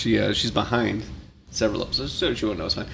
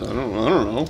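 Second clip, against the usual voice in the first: ordinary delivery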